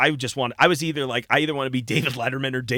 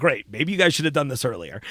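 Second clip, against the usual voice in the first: plain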